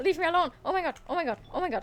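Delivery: frightened. Playing a scary game as monsters close in: scared. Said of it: "I'm scared, I'm scared".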